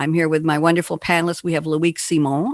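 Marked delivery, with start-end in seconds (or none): 1.6-2.5 words pronounced with a French accent. Host introducing a panelist on her show, name in french accent. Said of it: "I'm saying it with a French accent".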